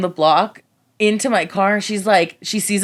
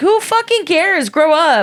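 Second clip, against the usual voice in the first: mock pissed-off, furious shrieking yell, very high; 10 semitones higher, 3 dB louder than usual. Retelling what she yelled at him, retelling an angry yell. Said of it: "I was pissed and I was yelling".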